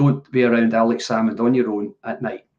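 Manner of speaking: ordinary talk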